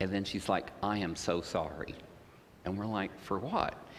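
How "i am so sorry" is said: put-on serious tone, much slower. Retelling a reunion, voicing a woman from high school, retelling a serious apology. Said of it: "she got really serious".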